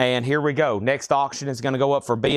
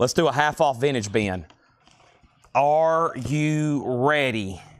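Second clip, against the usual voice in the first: normal talking voice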